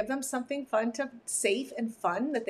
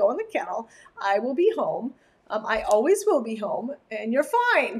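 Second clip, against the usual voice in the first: plain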